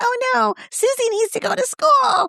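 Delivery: very high, eerie, creepy doll voice. Describing a TikTok creator who makes voices for her dolls, creepy doll voice. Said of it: "it sounds creepy".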